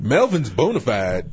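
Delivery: put-on southern accent. Saying a word the group brought back: put-on Southern accent. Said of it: "That was Southern for me".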